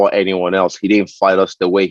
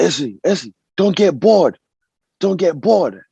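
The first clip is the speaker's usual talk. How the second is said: put-on, very high, yelled-out call; 10 semitones higher than usual. Retelling a coach's call from beside the cage: imitating a coach yelling. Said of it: "he just yelled out".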